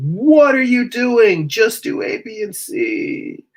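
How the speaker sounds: very high, stretched-out, drawn-out shriek. Voicing skilled Procreate users reacting to the work: imitating people screaming. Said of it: "just in there screaming at me like".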